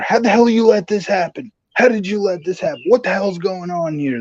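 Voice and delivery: loud, angry, barking yell. Retelling a wrestling segment, the boss yelling at his driver: imitating Vince McMahon yelling. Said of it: "he's yelling at his driver".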